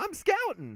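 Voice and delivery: mock very high, funny, comic, squeaky voice. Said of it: "this is the funniest voice".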